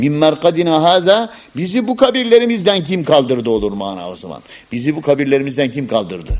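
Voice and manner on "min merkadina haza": min merkadina haza run together, raised, no pause. Showing the verse read without the sekt stop: no pause in min merkadina haza. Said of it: "burada sekt yapmadan geçilirse".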